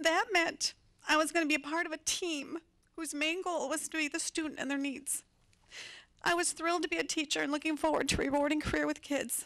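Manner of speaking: speaking while crying, tearful voice. A school counselor speaking about starting a teaching career, crying while speaking. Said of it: "I'm going to cry through the whole thing".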